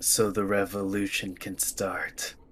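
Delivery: soft, hushed whisper, very close in, right at the ear. Leaning in close to a betrayed guard in the game: whisper. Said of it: "I'm gonna just lean in close and whisper".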